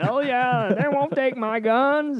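put-on Alabama accent. Describing who you see on the news: imitating a guy from alabama. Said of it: "some guy from Alabama with bad teeth going".

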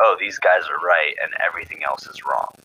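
normal talking voice

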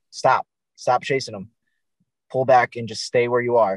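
ordinary talk

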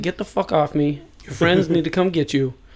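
put-on angry cop voice, audibly angry. Retelling how a cop shook off a drunk man: imitating an angry cop. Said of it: "he's just pissed".

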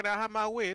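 high, put-on English accent. Acting out an imagined drug lord in Canada, in an English accent. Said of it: "that's that's an English accent".

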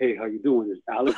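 mock very low, soft, groggy just-woke-up rasp. Retelling calling a friend as his older sisters answered; just-woke-up voice. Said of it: "It would just come out like that because I just woke up".

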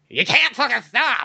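bad cartoon duck voice, high and loud. Imagining a costumed character scaring a kid: bad Donald Duck voice. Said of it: "Or I can't do a Donald voice".

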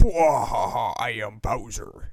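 booming, very loud, boastful, belted out at full volume. Criticizing the voice acting, quoting the character: Bowser impression. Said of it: "he's like".

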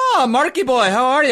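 bad put-on Irish accent. Greeting the other speaker by an irish nickname, in a terrible irish accent. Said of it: "That's my terrible Irish accent".

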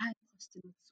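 barely audible, very quiet, shy, bashful voice. Retelling a shy customer's request at a pharmacy counter: imitating someone speaking in a low tone. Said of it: "in a low tone".

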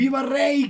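mock very high-pitched yell. Retelling how a tipsy father-in-law shouted as guests left: imitating someone shouting. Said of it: "mi suegro grita".

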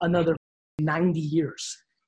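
slow, deliberate, each word spelled out pointedly. Advising a twenty-three-year-old to slow down and relax: said slowly. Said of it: "let me say it slowly to your face".

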